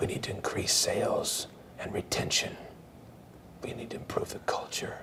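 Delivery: deep, hushed, barely whispered superhero voice. Imitating people announcing a plan, in a deep Batman-style whisper. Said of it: "they want to make it sound deep".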